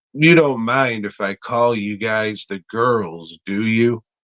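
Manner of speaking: ordinary talk, nothing marked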